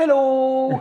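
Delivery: put-on Dutch accent, pitched way up. Imitating how the Dutch say hello: imitating a Dutch accent, like Sven from Frozen. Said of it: "the Dutch are like".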